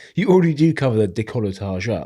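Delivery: ordinary talk, nothing marked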